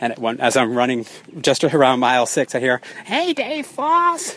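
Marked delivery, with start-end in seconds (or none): 3.0-4.3 high, slow, scratchy called-out voice. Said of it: "she actually has kind of a scratchy voice like that".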